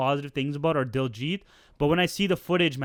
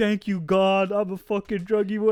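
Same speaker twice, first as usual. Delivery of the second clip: put-on crying voice, pitched higher; 5 semitones higher, 3 dB louder than usual. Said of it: "at the end he's, like, crying. He's like".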